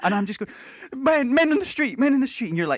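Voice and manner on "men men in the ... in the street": mock breathless, rushed words, much higher pitch. Retelling their past self, like a child rushing to tell mum, mock out-of-breath. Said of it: "they're out of breath and they're just—they're trying to get all of the words out there".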